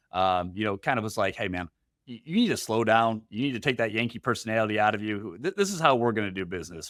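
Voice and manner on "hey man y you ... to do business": plain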